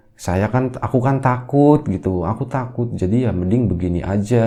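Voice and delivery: ordinary delivery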